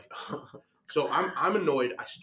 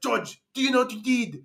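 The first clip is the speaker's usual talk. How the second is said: put-on French accent, pitched up; 10 semitones higher, 6 dB louder than usual. Retelling what a woman said to him, in a french voice. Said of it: "I'm gonna be doing a French voice for her".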